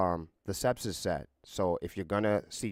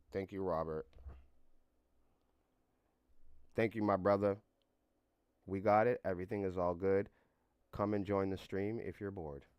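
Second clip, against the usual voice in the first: robotic monotone voice, quieter; 6 dB quieter than usual. Thanking a viewer and inviting people to the stream: talking like a robot. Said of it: "Why am I talking like a robot?".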